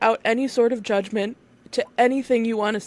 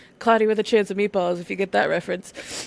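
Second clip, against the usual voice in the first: ordinary delivery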